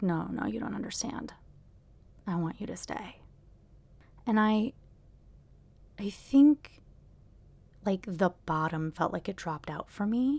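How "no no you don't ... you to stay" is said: very calm, quiet, steady, insistent delivery. Retelling what he said to the speaker, imitating a calm voice. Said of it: "he very calmly was like".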